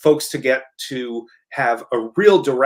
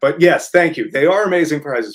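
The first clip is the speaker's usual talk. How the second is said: words broken up by laughing; 2 semitones higher than usual. Thanking another speaker after a funny comment, laughing while talking. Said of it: "I'm laughing at that comment".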